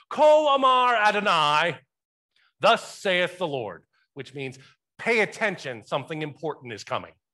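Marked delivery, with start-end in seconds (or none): 0.2-1.8 very high, loud Jamaican accent. Speaker quoting a hebrew phrase as learned from a jamaican professor: jamaican accent. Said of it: "how to say this in Hebrew with a Jamaican accent".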